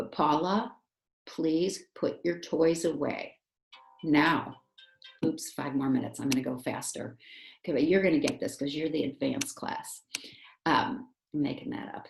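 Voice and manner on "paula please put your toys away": deliberate, slow, serious delivery. Speaker demonstrating to the class how to ask Paula, serious voice. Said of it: "I'm going to use a serious voice".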